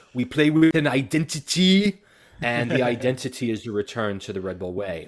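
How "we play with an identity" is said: put-on Australian accent, loud, raised and high. Quoting the new coach's words, in Gerhard Struber's Australian accent. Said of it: "as he says in his lovely Australian, uh, accent".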